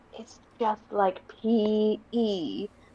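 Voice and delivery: slow, hushed, drawn-out half-whisper. Telling a story, a girl half-whispers to a ball from her pocket: half-whispering. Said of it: "she whispers to the ball".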